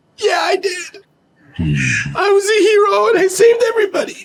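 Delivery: very high, tearful, weeping crying speech. Asked whether he saved the day, a character answers, crying while talking. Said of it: "He starts to cry".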